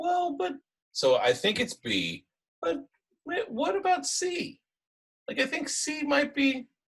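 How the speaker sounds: very high, swooping, doubtful, second-guessing head voice. Explaining kinds of second guessing, the speaker voices it: high doubtful inner voice. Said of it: "I call it the high voice in your head".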